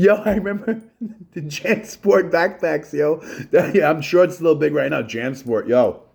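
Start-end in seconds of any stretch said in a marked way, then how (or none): 0.0-3.2 high, slow laughing through the words. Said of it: "I can't stop laughing".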